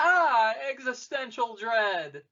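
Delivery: high, loud mock panic, like a cartoon freakout.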